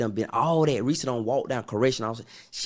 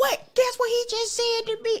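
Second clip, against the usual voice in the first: mock loud, very high, laughing disbelief. Retelling how she burst out laughing, quote her, retelling her loud reaction. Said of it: "She turned red loud".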